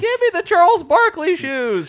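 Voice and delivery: high-pitched, shrill, loud, swooping whine. Picturing someone buying sneakers at a shop: Jerry Seinfeld high-pitched whine. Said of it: "Jerry Seinfeld with his high-pitched whine".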